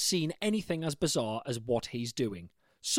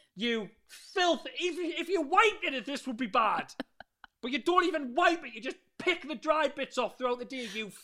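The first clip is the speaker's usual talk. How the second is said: scolding tone, pitched higher; 10 semitones higher than usual. Acting out telling a man off as if he were a dog: scolding him like a dog. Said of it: "rub his nose in it like a fucking dog".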